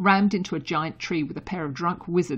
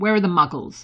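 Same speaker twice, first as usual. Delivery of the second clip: curt, demanding tone, louder; 6 dB louder than usual. Someone questions a person who has just woken and sat up, curt demand. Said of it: "Harry demanded shortly".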